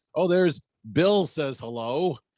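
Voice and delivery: slow, drawn-out, distracted reading. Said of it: "you'd be like".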